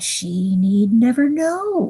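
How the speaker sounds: slow, sugary, wheedling, sweet coaxing voice. The witch replies to the listener's objection, speaking sweetly. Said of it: "speaking more sweetly than you would have thought".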